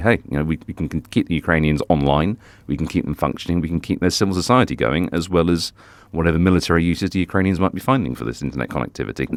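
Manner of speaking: ordinary delivery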